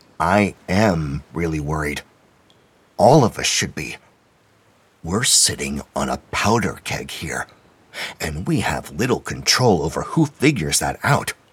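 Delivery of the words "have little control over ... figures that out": ordinary delivery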